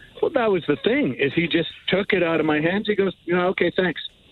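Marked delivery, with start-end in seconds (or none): 3.3-4.0 breezy, offhand, casual no-big-deal tone. Retelling how the officer took the bags from their hands: imitating an offhand officer. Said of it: "Like it was nothing".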